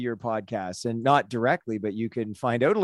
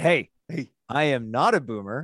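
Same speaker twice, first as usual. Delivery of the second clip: imitated irate, angry tone; 2 semitones higher than usual. Retelling his reply to his son's teasing: imitating an irate reply. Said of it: "I get irate".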